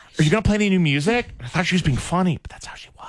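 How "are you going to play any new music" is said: voice used for talking to a puppy. Retelling how a date spoke to him: imitating talking to a puppy. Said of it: "the way you talk to a puppy".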